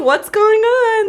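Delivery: high-pitched excited voice. Retelling her mom answering a late-night phone call: imitating mom's high-pitched voice. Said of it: "so high pitched".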